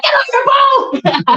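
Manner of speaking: mock very high, drawn-out emotional yell. Retelling a kayak accident, imitating an emotional shout. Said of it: "we were so emotional about it".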